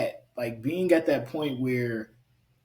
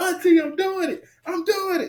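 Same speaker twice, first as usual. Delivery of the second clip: mock very high, thrilled, excited yell; 4 dB louder than usual. Retelling learning to ride a bike, calling out to her aunt; retelling a yell across. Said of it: "I'm yelling across".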